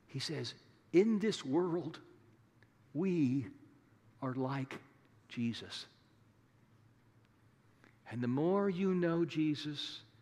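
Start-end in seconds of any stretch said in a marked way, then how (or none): 0.9-5.8 hushed, confiding, secretive stage whisper. Imagining the elderly apostle John letting you in on a secret: half-whispering. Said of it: "then speaking in a whisper, as if letting you in on a secret".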